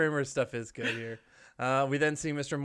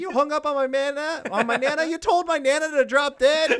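distressed freak-out, very high, loud, shrieking; 13 semitones higher, 5 dB louder than usual. Retelling a character's freak-out over a phone call: imitating Jerry's distressed high pitch. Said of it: "you get that high pitch that you love so much".

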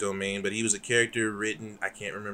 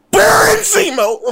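shrill, very high, very loud full-volume scream; 16 dB louder than usual. Discussing a show announcement, the speaker screams a returning character's name. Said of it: "I'm screaming".

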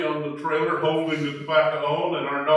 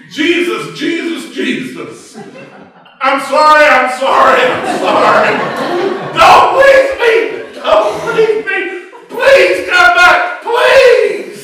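fervent put-on wailing, very high, loud, desperate; 14 dB louder than usual. Telling a story of kneeling in the backyard, reenacting fervent desperate praying. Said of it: "started praying fervently and inarticulately".

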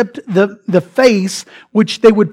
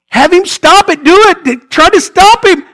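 put-on high, raised yell; 9 semitones higher, 5 dB louder than usual. Imagining Lucifer as Jesus takes the keys, acting out Lucifer yelling. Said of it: "And Lucifer's yelling".

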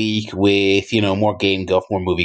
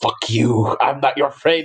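put-on dead serious, intense, hard-hitting delivery; 5 semitones higher than usual. Retelling a wrestling video clip: intense Kenta impression. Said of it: "he delivered it with such intensity".

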